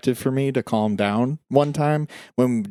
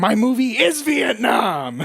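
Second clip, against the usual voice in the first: mock very high, very slow screeching wail; 12 semitones higher, 3 dB louder than usual. Retelling a director losing his mind making Apocalypse Now: imitating Francis screaming. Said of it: "And he's screaming".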